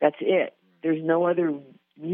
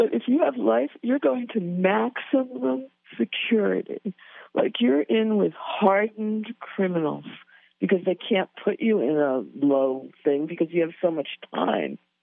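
tearful voice, close to tears; 3 semitones higher than usual. Speaking about people serving life sentences, tearing up. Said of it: "I'm like tearing up".

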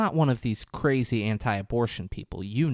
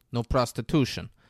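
put-on Russian accent. Recounting a film scene, quoting a man: Russian accent. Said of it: "He has a Russian accent".

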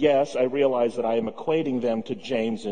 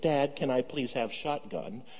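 sweetest, most angelic, soft delivery; 2 semitones higher, 6 dB quieter than usual. A father retells his kids asking him a favor, imitating kids' sweetest angelic voice. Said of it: "even in their sweetest, most angelic voice".

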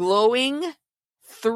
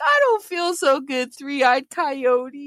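high, slow, wobbly, warbling voice; 5 semitones higher than usual. Retelling a talk with a three-eyed coyote, answering it in a warbly voice. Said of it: "in a warbly voice".

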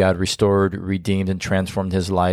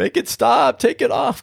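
pleading desperately. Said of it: "He's like".

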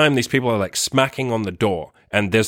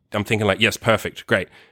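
plain

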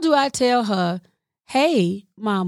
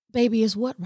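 gentle soft voice; 5 dB quieter than usual. Tired mom answering her child's repeated question: soft voice. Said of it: "I'm trying to use my soft voice".

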